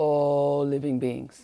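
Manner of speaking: weighty lecturing voice, strong stress on all. Quoting a teacher on benefiting beings: Lama Zopa Rinpoche's way of speaking. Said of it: "That's how he speaks".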